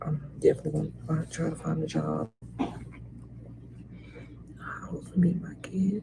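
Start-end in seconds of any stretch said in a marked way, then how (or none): 2.6-6.0 soft whisper. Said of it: "I'm whispering 'cause I'm in a lot here".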